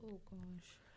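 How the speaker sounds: soft, hushed, whispered gasp of shock.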